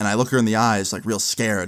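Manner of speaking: normal talking voice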